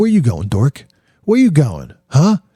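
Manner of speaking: high, sing-song, jeering schoolyard bully voice. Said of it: "And he's like".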